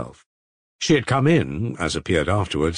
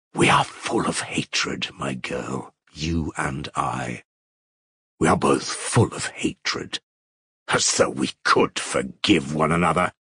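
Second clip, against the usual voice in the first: low, venomous, spiteful and vindictive voice; 5 semitones lower than usual. A woman answers another who begged her forgiveness: vindictive, venomous. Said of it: "in a vindictive, venomous voice".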